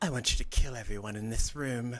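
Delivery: whispering in a witch voice. Voicing a witch who appears from a shadow: witch whispering. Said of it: "one of the witches appears and whispers".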